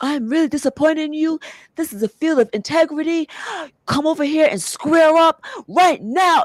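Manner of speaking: very high, shrill, loud screaming tirade. Retelling how a man screamed at a room of nurses: imitating a man screaming. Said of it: "started screaming".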